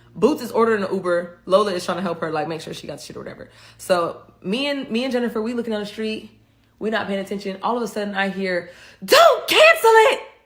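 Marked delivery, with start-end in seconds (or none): 9.0-10.2 shrill, very high, loud shout. Retelling a sudden shout heard from behind: imitating someone yelling. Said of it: "Why are you yelling?".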